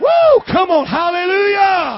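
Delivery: very loud, drawn-out, swooping shout. Leading a congregation on the count of three: shouting hallelujah. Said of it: "we're gonna shout hallelujah".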